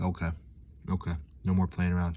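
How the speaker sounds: ordinary talk, nothing marked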